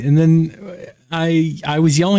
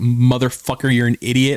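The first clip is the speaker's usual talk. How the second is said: ordinary talk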